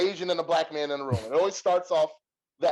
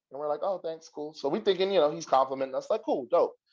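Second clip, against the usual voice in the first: normal talking voice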